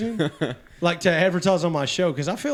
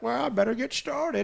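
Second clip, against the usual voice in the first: parrot voice, higher and quieter; 7 semitones higher, 4 dB quieter than usual. Voicing grandmas answering a cooking host: parrot voice. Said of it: "I make 'em talk like parrots".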